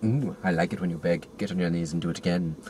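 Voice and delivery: low, bad, wobbly, inconsistent Scottish accent. Retelling a scene, the speaker voices the reply to the king in a bad Scottish accent. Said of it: "Why is my Scottish accent suddenly".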